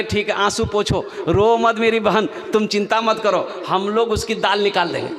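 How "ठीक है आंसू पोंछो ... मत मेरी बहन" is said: usual speaking voice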